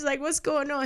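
put-on distraught, young-sounding, high, tearful-sounding distress.

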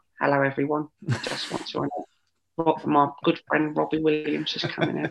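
tiny, high, soft, small little voice. Recalling an England captain introducing a friend on stage, the speaker does a tiny little Beckham voice. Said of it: "tiny little Beckham voice".

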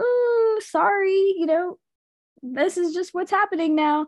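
high, dismissive, brushing-off voice. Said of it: "Miss Patty's like".

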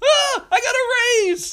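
squeaky, very high-pitched, very slow delivery. Retelling a manager's pun about a ladder: imitating a high-pitched voice. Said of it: "he had this very high-pitched voice".

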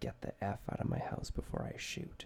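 hushed, really quiet, breathy whisper. Retelling a father's threat to the intruders: imitating speaking very quietly. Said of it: "really, really quietly to them".

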